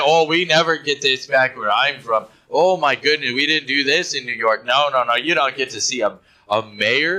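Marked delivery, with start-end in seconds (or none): none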